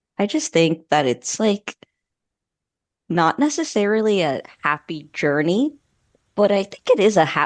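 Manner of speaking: voice breaking on "ha". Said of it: "the voice crack".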